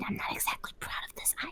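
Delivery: hushed, very quiet, barely voiced whisper. Playing a noble excusing a cousin to guards, whispering in character. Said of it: "I'm gonna whisper".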